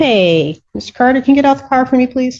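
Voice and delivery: mock polite, courteous, all-manners delivery. Asking a witness if the order sounded like this: imitating a polite request. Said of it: "So are you saying it like".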